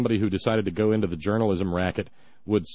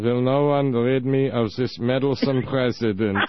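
put-on, mock German accent; 2 semitones higher, 4 dB louder than usual. Speaker voicing a line that came to mind during a speech, in a German accent. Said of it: "this German accent going".

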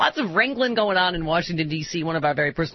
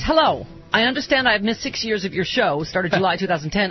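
ordinary delivery

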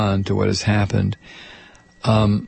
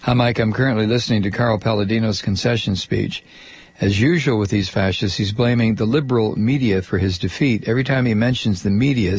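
normal talking voice

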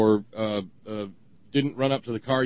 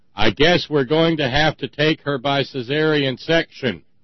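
acted, pointed, loudish announcing voice; 2 semitones higher, 6 dB louder than usual. Retelling what a man said about Margie in a loudish voice. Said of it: "speaks in a loudish voice".

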